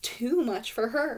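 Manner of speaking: plain reading voice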